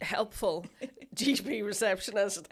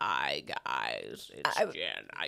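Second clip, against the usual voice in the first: put-on horrific sick voice, lower pitch; 4 dB quieter than usual. Imitating a friend's sick voice note: sick voice like Vecna. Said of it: "You sounded like Vecna out of Stranger Things".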